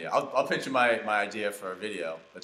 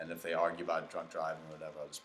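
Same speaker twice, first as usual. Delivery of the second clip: normal talking voice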